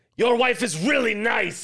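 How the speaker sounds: very high, loud, shrill, over-the-top aggressive delivery. Acting out someone looking at a man and giving him a compliment, mock super-aggressive. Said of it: "just said it like it was super aggressively".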